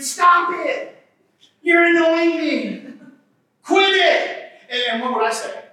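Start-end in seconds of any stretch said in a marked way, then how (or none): 0.0-4.5 mock high scream, every word drawn out. Recalling how she reacted as he hovered his finger near her, retelling a scream. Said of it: "and she would scream".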